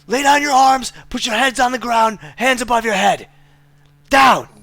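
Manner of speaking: very high, loud, barked yelling. Voicing a spear-holding man ordering the group down: NPC yelling. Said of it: "You hear this man yelling".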